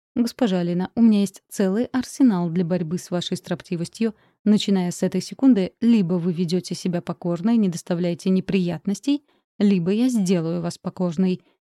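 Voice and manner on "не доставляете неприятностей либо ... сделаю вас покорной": ordinary delivery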